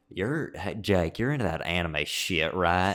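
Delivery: put-on country bumpkin hillbilly accent. Retelling when Austin walked up and asked about anime: imitating Austin's country accent. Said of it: "he's super country, just like bumpkin hillbilly".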